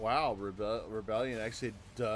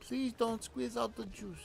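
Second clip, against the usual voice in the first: very high-pitched, put-on Indian accent; 11 semitones higher than usual. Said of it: "you talking like this".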